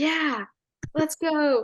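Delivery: high, put-on, totally sarcastic enthusiasm. Retelling how a friend cheered the opponents on: imitating sarcastic cheering. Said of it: "totally sarcastically".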